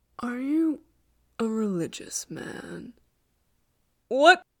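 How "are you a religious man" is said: hushed, whispered murmur, barely above a whisper. A vampire pauses and asks a question, murmuring. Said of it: "he murmured".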